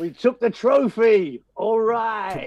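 poorly faked laid-back actor voice. Greeting fellow champions of Europe: worst Matthew McConaughey impersonation. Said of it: "in my worst Matthew McConaughey impersonation".

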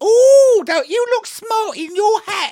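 put-on English girl voice, very high and loud. Acting out an english girl in uniform arriving at a shop: playing an english girl. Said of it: "She comes in and goes".

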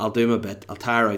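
ordinary delivery

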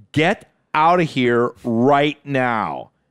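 angry, slow, irritated delivery. Retelling how the masseuse ordered him out: imitating an angry woman. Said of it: "And she was pissed".

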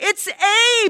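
shrill shriek at a very high pitch. A mother hears knocking at the front door, screaming. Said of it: "Erda screamed".

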